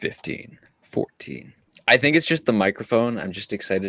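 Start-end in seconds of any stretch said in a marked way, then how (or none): 0.0-1.5 hushed, whispered launch-control style delivery. Doing a rocket launch countdown for another speaker: rocket launch countdown. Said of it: "a little rocket launch".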